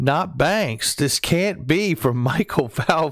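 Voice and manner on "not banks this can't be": extremely heavy, pitched-up sarcastic voice. Reading out a commenter's remark about banks, reading a comment mock-sarcastically. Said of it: "in the most sarcastic voice".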